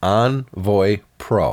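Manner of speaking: careful, deliberate, drawn out very slowly.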